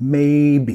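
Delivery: first syllable may of maybe stressed. Demonstrating english word stress for spanish speakers, stress on first syllable of maybe. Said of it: "enfatizando la primera sílaba".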